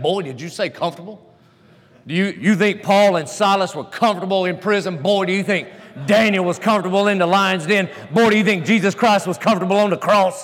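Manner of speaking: play-acted, barked Southern coach voice. Retelling how the old southern coach talked: imitating the coach barking. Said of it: "he kinda barked".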